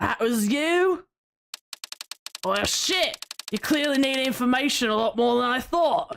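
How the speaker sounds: poor put-on British accent. Voicing a rude game character: bad british accent. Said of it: "This accent sucks".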